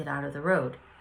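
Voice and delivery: ordinary talk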